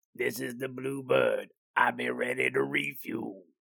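rough, creaky voice, pushed out. Quoting a favorite line from Iron Eagle: Doug Masters impression. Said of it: "that is my Doug Masters imitating".

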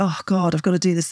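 mock dreading, negative, reluctant tone. Describing needing to sort oneself out, acting out a negative, dreading tone. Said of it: "you can hear the tone of my voice".

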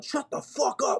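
put-on sudden yelled outburst in a childlike voice. Retelling a fight between kids in a class, acting out one kid's yell. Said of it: "one kid yelled".

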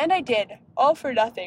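slow words stretched out through a yawn. Talking about an antibiotic for their skin, yawning while speaking. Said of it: "Sorry, I'm yawning".

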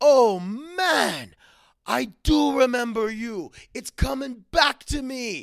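put-on light Caribbean accent, very high and loud. Quoting a man from the Caribbean islands, in a put-on Caribbean accent. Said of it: "I'm going to do a little bit of an accent".

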